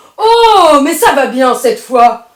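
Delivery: very loud, thundering, thunderous bellow. Narrator reading a story, voicing the irritated grandfather's reply: thunderous voice. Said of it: "de sa voix ton- tonitruante".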